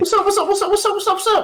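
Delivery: put-on lost voice. Greeting viewers with a put-on silly voice used after losses. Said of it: "That's my lost voice".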